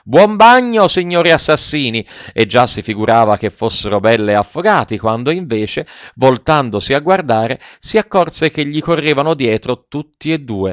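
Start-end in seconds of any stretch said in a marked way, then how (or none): 0.2-2.1 high-pitched shout through laughter. Running away, he calls back to the two assassins in the ditch: shouted while laughing. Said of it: "urlò ridendo e seguitando a correre".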